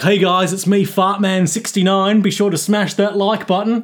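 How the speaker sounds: Cockney accent, vlogger-style delivery. Imitating how YouTubers sound greeting viewers: Cockney accent. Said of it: "Why is he Cockney?".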